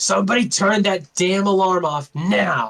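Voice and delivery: sweet voice turning loud, slow and angry. Voicing a woman who turns around, her sweet voice becoming suddenly angry. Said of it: "her sweet voice becomes this angry".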